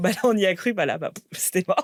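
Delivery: acted nervous laughter. An entrepreneur recalls what they told investors back then, retelling nervous laughter. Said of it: "j'en rigolais un peu nerveusement".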